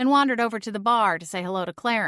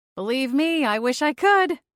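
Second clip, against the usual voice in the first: talking through a laugh, pitched up; 6 semitones higher, 4 dB louder than usual. Reading the narrator's reply to a pub regular: laughing while talking. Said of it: "I laughed".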